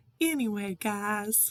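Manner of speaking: put-on breezy southern US accent. Retelling a catchphrase of Llama Mama Kayla: imitating Llama Mama Kayla's southern accent. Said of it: "she always goes".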